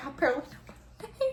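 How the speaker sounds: high voice, laughing through the words.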